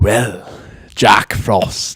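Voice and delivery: dark, scary English villain accent. Asked for an example of a villain's voice: dark English accent. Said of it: "Can you give us an example of a dark English accent?".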